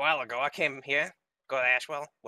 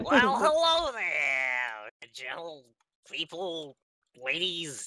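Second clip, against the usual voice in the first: swooping goblin voice, drawn-out there. Introducing the goblin ranger character to the group: Wellblood goblin voice. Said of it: "It's me, your boy, Wellblood".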